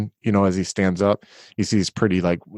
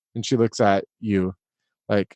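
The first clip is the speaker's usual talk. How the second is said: ordinary delivery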